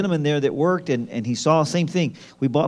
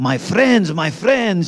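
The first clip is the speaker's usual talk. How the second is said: put-on excited drunk man voice, higher and louder; 4 semitones higher, 4 dB louder than usual. Retelling how a tipsy visitor greeted them at the door: imitating an excited drunk man. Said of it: "so excited".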